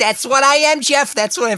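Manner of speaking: very high, goofy, squeaky slapstick comic voice. Trying a Nathan Lane voice for Jeff that comes out more as a Jerry Lewis impression. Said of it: "That was a little more Jerry Lewis".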